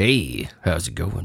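slow, sultry, sexy bedroom voice. Showing how the voice sounds right now: sexy bedroom voice. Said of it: "kind of bedroom voice".

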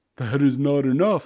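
laughing while speaking. Offered freedom in exchange for a rescue, a swimmer answers, laughing. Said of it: "laughed Keo".

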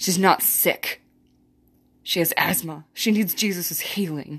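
mock sure, authoritative, matter-of-fact tone. Recalling what they said about the girl, re-enacting own authoritative tone. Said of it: "in this authoritative, matter-of-fact tone".

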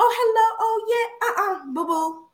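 very high, fake airhead voice. Retelling a fake act once put on for men: imitating a fake airhead act. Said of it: "I was playing this fake game like".

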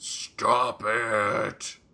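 loud, weird, dark, angry delivery. Describing a performer's odd take on a neurotic character, imitating a dark angry tone. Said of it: "weird, like, dark, angry".

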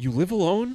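gleeful, high, loud mock teasing. Teasing a co-host about being childless: impression of one's own teasing. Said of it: "That was a great impression of yourself".

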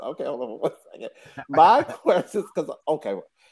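giggly, laughing through the words, breaking up. Trying to ask a question while laughing: laughing while talking. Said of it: "I'm laughing".

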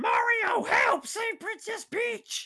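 very high, slow, dragged-out bad voice. Acting out a scene from a pitched movie, awful Toad voice. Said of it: "That was awful".

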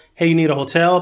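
ordinary talk

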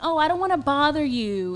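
small, little, feminine-sounding way of talking. Retelling what a guy who kept messaging said, imitating a guy's feminine voice. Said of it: "in his little kind of feminine voice".

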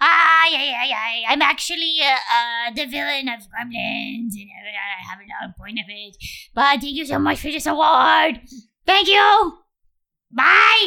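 small creature voice like a little gremlin. Accepting a mock award on behalf of Phoebe Cates: Gizmo voice. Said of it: "Accepting on behalf of Phoebe Cates is Gizmo".

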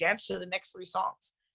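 normal talking voice

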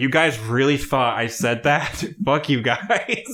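indignant, fed-up, pissed-off angry tone. Retelling Paris Hilton's reaction to a fake tweet: imitating an angry Paris Hilton. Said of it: "she was pissed".

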